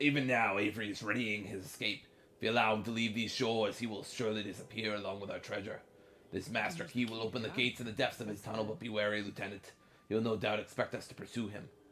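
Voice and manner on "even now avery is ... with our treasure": swashbuckling pirate voice, reading aloud. Speaker reads a note aloud to the others, in a pirate voice. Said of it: "I'll read in my pirate voice".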